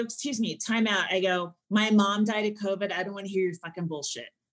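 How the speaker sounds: ordinary talk, nothing marked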